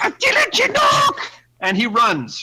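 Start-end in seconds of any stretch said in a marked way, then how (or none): 0.0-1.3 very high, tiny, squeaky creature voice. Narrating a game scene, the speaker voices a startled creature: squeaky creature voice. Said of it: "he squeaks he squeaks out".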